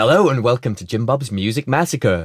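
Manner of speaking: put-on American accent. Host opens the show with its welcome line, in an american voice. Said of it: "I start with that American voice".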